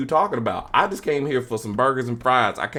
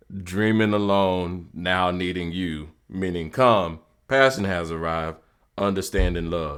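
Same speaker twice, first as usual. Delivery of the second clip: very deep put-on voice, dropped as low as possible; 6 semitones lower than usual. Saying a requested line back to Pops: deepest voice possible. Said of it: "in the deepest voice that I could gather".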